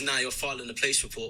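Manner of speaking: ordinary talk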